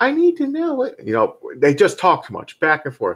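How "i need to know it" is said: put-on girl's voice, very high. Retelling a back-and-forth between him and her, in a girl's voice. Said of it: "he did the girl's voice".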